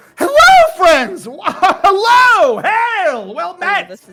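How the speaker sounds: very high, overeager, swooping sing-song voice. Game master voicing two guards greeting the players, very excited greeting. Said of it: "they both wave at you like very excitedly".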